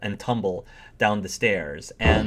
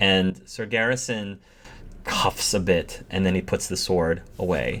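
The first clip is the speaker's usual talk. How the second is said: ordinary delivery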